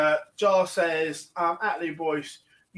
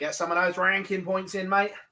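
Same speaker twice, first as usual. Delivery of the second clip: fake Australian accent. Agreeing with Glenn about ranking points, quoting a player: Ronnie O'Sullivan's fake Aussie accent. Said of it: "In his fake Aussie accent".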